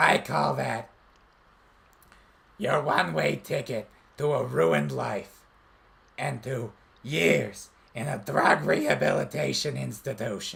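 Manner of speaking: put-on rough, strained, raspy character voice. Performing an anti-drug PSA as an encore: Smoker Toad character voice. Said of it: "repeat the Smoker Toad line".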